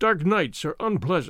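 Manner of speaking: ordinary delivery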